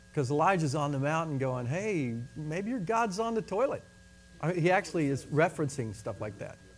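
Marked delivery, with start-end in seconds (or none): 1.6-3.8 jeering, scornful, sing-song sarcastic taunting. Retelling how Elijah taunted them on the mountain, acting out a mocking taunt. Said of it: "He's making fun of them the whole time".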